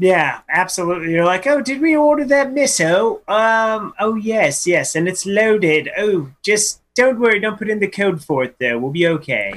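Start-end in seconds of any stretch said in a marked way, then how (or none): 1.5-9.6 bad put-on French accent sounding British, pitched higher. Acting out someone checking a mail order: French accent that sounds British. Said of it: "your, uh, French accent sounds, uh, uh, slightly British".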